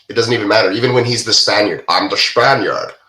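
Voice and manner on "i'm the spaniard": put-on Scottish accent. Joking about actors always keeping their own accent: Sean Connery Scottish accent. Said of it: "The Scottish accent".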